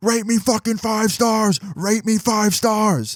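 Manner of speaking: put-on high-pitched, repeated, demanding screaming. Retelling a driver's words while walking away: imitating someone screaming. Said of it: "screaming at me as I'm walking away".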